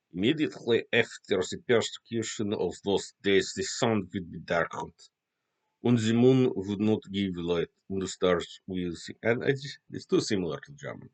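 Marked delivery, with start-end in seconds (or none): 0.1-9.1 attempted Russian accent, read aloud. Reading a bible passage aloud, in an attempted russian accent. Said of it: "I'm trying to do Russian".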